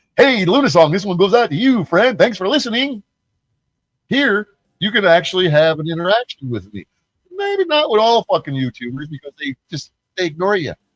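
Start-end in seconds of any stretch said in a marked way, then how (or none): 0.2-3.1 pitched-up radio DJ voice, shouted. Describing calling a radio station, imitating the radio DJ's reply: imitating a radio DJ. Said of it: "And then they go".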